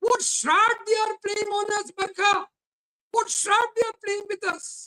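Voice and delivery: distressed, upset tone, pitched high. A debate guest appeals to the host; upset. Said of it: "because you sound so upset".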